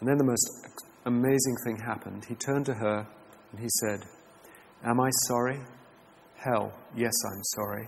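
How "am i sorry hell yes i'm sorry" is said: choked-up, emotional reading, voice catching. Reading aloud a written account of a man's apology, getting choked up. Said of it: "I'm getting choked up myself as I read it".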